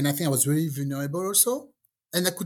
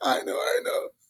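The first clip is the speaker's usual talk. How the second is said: put-on tearful, crying voice. Retelling a woman's reply to the priest at a wedding: imitating someone crying.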